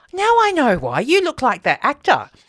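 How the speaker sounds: high, excited, blurted realization. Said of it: "I went".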